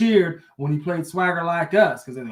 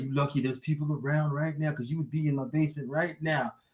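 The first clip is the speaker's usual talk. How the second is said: hushed, under-the-breath stage half-whisper; 8 dB quieter than usual. Retelling a threat half-whispered to a woman on stage: imitating someone half-whispering. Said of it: "he was whispering".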